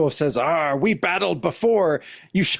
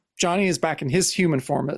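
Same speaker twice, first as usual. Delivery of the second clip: ordinary talk, nothing marked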